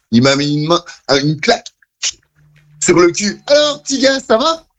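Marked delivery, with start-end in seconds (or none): 3.4-4.5 put-on girly voice, pitched very high. Quoting a costumed man who slapped him from behind, in a girl's voice. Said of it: "je le fais avec une voix de fille".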